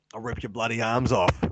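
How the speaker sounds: put-on Australian accent, four-armed creature voice. Imagining a weird four-armed hybrid creature while chatting, Aussie accent creature voice. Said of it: "a weird four-armed creature with an Aussie accent".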